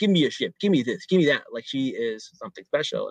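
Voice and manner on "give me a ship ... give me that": acted arrogant, demanding tone. Retelling a show scene, acting out a character's demands: mock-arrogant demands. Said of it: "she's really arrogant".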